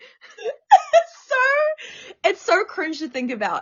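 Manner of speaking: very high, swooping speech through laughter. Recalling an embarrassing first stage spot, laughing while talking. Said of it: "I can't not laugh at you".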